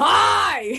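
shouting. Shouting a greeting across the water to a stranger: shouting a greeting. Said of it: "I'm gonna shout it like how he did".

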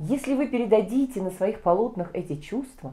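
ordinary delivery, nothing marked

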